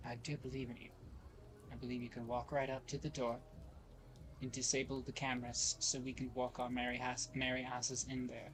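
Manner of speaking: soft, clear, private half-whisper. Playing a character leaning on a cane, grabbing a companion's shoulder, half-whispering. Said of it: "I'm like clearly whispering to him".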